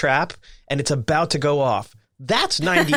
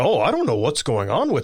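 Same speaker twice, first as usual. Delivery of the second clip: put-on aloof, clueless-sounding voice; 2 semitones lower than usual. Describing how an interviewer can come across: aloof George Noory impression. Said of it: "a little aloof".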